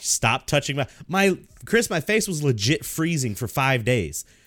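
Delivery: plain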